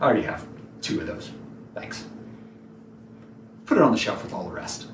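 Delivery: breathy, whispered, hushed, arrogant, dismissive tone. Acting out how you might respond to her gift, a mock-arrogant dismissive reply. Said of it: "sometimes it's just arrogant".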